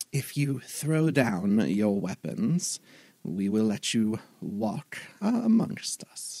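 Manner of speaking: swooping put-on owl creature voice. Narrating the scene, the speaker voices the other owling speaking: owling creature voice. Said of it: "going into the other owling voice".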